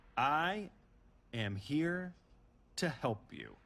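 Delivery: very slow, halting, broken up word by word. Answering Jericho's suspicion about the masked man, speaking slowly. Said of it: "I'm going to say this slowly".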